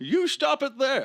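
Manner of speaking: very high-pitched, loud and slow delivery. Doing a bit as Bane stopping a mugging: Bane voice. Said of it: "Bane stopping a mugging from happening".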